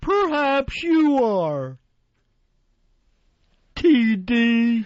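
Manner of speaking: wacky high voice, very slow. Retelling a confrontation, imitating the angry comedian: wacky Emo Phillips voice. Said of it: "his wacky Emo Phillips voice".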